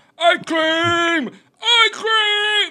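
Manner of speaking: very loud, very high, shrill cry with stretched "cream". Speaker recalls yelling at their daughter after eating hot food, retelling a yell. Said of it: "I was yelling at my daughter".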